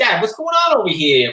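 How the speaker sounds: put-on New York accent. Imitating a son who talks like a New Yorker: put-on New York accent. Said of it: "he's got a New York accent".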